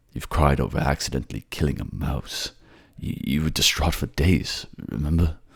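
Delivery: ordinary delivery, nothing marked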